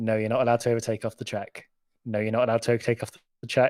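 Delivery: weary, sad, defeated and resigned sarcastic tone. Retelling how Alpine's complaints were answered: sad Michael Masi impression. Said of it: "old sad dad Masi sort of, ... his head in his hands".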